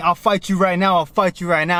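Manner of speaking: usual speaking voice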